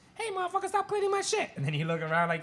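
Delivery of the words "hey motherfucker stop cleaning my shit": very high, slow-witted silly turtle critter voice. Describing a cleaning video where the turtle gets a voice: stupid turtle voice. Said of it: "You give it a stupid voice".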